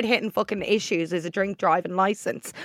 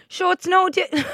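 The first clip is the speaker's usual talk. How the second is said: clumsy, really bad, very high put-on Kerry accent; 10 semitones higher than usual. Quoting what a man said to the speaker, in a really bad Kerry accent. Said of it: "I'm about to do a really bad Kerry accent".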